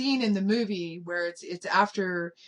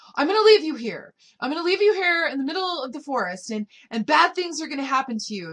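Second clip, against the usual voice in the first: play-acted, high, shrill, very loud screaming voice; 7 semitones higher, 5 dB louder than usual. Retelling how the older girl turned and screamed at the little girl: imitating someone screaming. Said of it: "she starts screaming at her".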